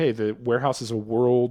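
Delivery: normal talking voice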